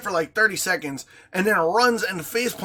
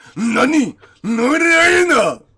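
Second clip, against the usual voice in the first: loud mock French with a Japanese-slanted accent. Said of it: "my French sort of slant to Japanese".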